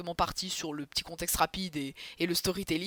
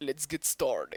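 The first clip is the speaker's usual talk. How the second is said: worst possible put-on English accent; 4 semitones lower, 4 dB quieter than usual. Kicking off the episode with an English phrase: very bad English accent. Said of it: "Pire accent anglais".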